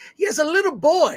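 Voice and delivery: put-on Scottish accent, pitched very high. Describing a movie scene, drifting into a put-on scottish accent. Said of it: "Why did I go into a Scottish accent?".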